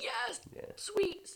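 very high, mild, scream-like screech. Retelling a scary film scene in a tunnel: imitating someone screaming. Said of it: "he's, like, screaming at them and he's like".

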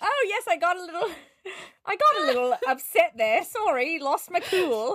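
high-pitched, slow bear voice. Imagining the bear apologizing for getting upset: Paddington voice. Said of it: "just Paddington who's just like".

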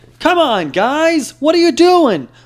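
very high, very loud, drawn-out cowboy drawl. Asked whether you can do Woody while talking about a movie, do a Woody impression. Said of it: "Woody impression?".

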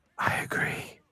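seductive whisper. Agreeing with the other speaker's prediction, in a seductive whisper. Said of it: "Why are you whispering things so seductively?".

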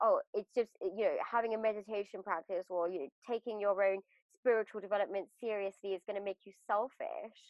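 ordinary delivery

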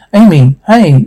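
plain

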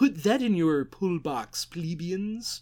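very poor put-on nerdy comic-shop clerk voice. On a podcast, sign off on an upcoming book in a bad Comic Book Guy impression. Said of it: "That was the worst comic book guy from The Simpsons ever".

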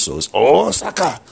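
Osaka said high and loud in mock Japanese accent.

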